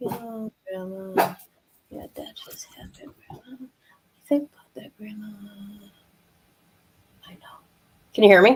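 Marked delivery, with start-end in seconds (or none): 0.0-7.6 barely audible, very quiet, breathy whisper. Showing how the man talks, in a whispering imitation of Chad. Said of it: "'Cause he talks like this".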